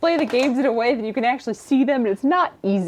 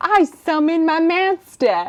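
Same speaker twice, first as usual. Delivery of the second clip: put-on Brooklyn accent in a cartoon character voice; 7 semitones higher, 4 dB louder than usual. Asked by someone to do your best impression, answer with a Joey Wheeler impression, Brooklyn accent. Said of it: "Do your best impression of it".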